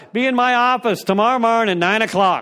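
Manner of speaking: very bad fake Irish accent, spoken loudly. A speaker retells Father Quinn's reply on the phone, in a bad Irish accent as Father Quinn. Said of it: "That was probably the worst Irish accent ever".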